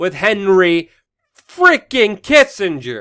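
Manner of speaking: very loud, exasperated outburst. Commenting on a historical parallel in the news: raised voice, a little frustrated. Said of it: "I'm raising my voice here again".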